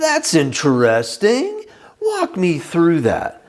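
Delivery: slow, swooping, biting, sharp sarcastic tone. Showing the right words said in the wrong tone: sharp sarcasm. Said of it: "If you say it with sharp sarcasm".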